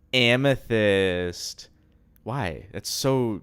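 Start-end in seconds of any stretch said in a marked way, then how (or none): 0.1-1.7 loud, put-on sultry, seductive come-hither voice. Imitating a cartoon character from the pilot introducing herself: seductive voice imitating a character. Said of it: "do a perfect impression".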